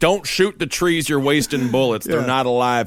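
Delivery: ordinary delivery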